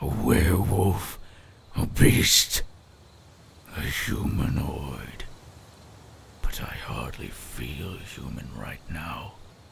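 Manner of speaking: low, lovesick, lovestruck werewolf voice. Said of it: "Lovestruck Werewolf (Day 3)".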